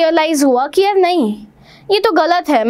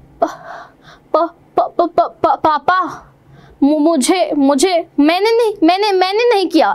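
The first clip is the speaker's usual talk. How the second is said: frightened stammer, halting, with repeated words. Imitating how she stammers in front of her papa, stammering with halting repetitions. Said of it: "इस तरीके से stammer करती है ये".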